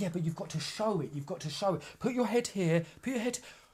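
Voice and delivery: high-pitched, bossy, directing voice. Retelling a mother telling her crying son how to look on camera: imitating the mum directing her son. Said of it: "she's like".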